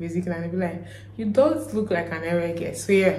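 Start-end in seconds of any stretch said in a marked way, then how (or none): none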